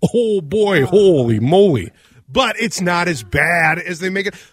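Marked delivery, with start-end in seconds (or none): 0.0-1.9 very slow, with long drawn-out O vowels. Speaker admits sometimes slipping back into the accent; slipping into the O accent. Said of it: "I slip back into the O".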